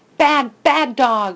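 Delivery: anguished, pained, repeated crying out. Hattie holds the dog tight, crying out. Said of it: "she cries over and over".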